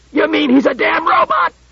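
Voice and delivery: piercing, very high, shrill screech. Told the advancing figure is the other man's partner, a man answers, shrieking. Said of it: "shrieked Klusar".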